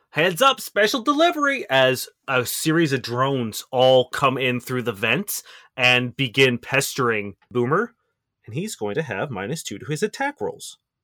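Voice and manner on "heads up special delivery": very high yell heard over loudspeakers. Voicing Quip over an intercom as drones come in: Quip yelling. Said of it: "Quip yell".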